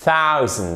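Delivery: stress on first syllable of thousand. French lesson on english numbers: stress on first syllable of thousand. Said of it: "avec un accent tonique exactement comme hundred sur la première syllabe".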